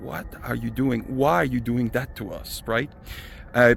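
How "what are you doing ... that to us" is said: ordinary delivery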